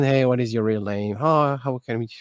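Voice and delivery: ordinary delivery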